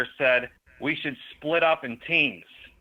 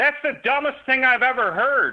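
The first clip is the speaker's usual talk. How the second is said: mock, very high-pitched yelled outburst; 11 semitones higher, 4 dB louder than usual. Retelling a comment to a friend while deafened: imitating his own past yelling. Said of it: "I'm yelling 'cause I can't hear myself talk".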